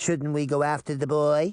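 plain

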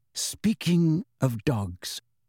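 hushed, soft-spoken, quiet delivery. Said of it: "said Snape softly".

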